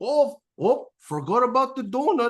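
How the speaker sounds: put-on Scottish accent. Retelling how a man pulled a donut from his pocket, in a Scottish accent. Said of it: "in this Scottish accent".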